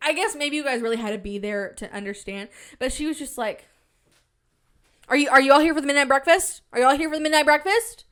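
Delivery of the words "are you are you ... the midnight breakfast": rapid, harsh, very loud yelling. Speaker recounts a woman yelling at people about the midnight breakfast; imitating a woman yelling at people. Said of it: "she's like yelling at people".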